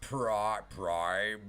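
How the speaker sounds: put-on robot villain voice. Trying a Megatron voice, saying a name. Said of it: "Best Megatron voice".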